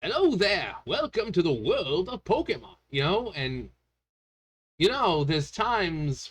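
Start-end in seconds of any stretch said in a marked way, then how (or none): 0.0-2.8 high, sing-song, swooping character voice. Doing Pokemon videos, switching to a Professor Oak voice. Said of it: "suddenly I change my voice to sound like Professor Oak".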